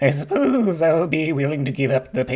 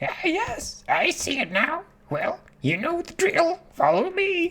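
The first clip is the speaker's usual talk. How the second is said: very high, squawky parrot voice; 12 semitones higher, 4 dB quieter than usual. Speaker voicing a parrot character's game dialogue, in a parrot voice. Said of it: "It's definitely this parrot".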